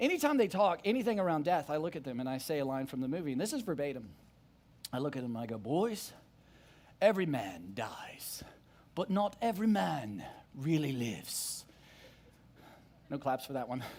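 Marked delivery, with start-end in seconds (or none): 5.6-11.6 put-on British accent crossed with country drawl. Quoting a movie line to the boys in a british and country accent mix. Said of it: "that's a little bit like British and country mixed in together".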